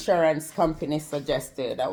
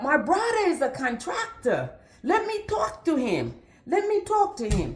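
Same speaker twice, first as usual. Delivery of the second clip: put-on Spanish accent throughout, swooping pitch; 7 semitones higher than usual.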